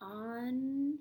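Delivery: each sound of unpack drawn apart slowly. Showing learners how to sound out a spelling word: stretched-out word. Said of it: "Stretch it out".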